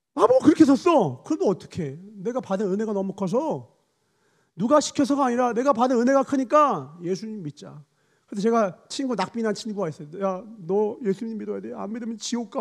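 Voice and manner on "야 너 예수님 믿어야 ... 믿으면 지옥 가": put-on pleading, crying through tears. Retelling begging a friend to believe, imitating own past crying. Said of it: "막 울면서 얘기하니까".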